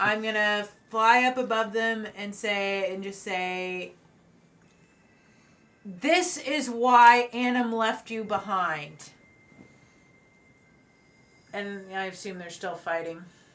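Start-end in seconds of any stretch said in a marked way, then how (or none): 5.8-9.1 loud, slow yell. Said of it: "I think you should just yell".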